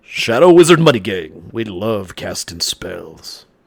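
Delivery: loud put-on radio DJ announcer delivery. Asked whether they have a DJ voice, the speaker tries one: DJ voice. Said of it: "Do I have a D J voice?".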